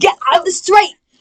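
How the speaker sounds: put-on British accent slipping in. Friends mimicking a guy's accents, one tries new york; accidental british accent. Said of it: "that was British".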